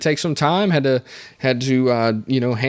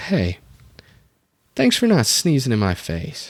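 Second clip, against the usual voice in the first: solemn, earnest delivery. Retelling what the doctor said after a sneeze: imitating someone getting serious. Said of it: "she got real serious".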